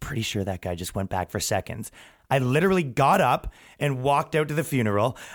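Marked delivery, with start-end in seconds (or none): 0.0-1.9 hushed, close-up whisper in the ear. Recounting what someone whispered into your ear during communion, imitating someone whispering. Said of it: "whispers into my ear".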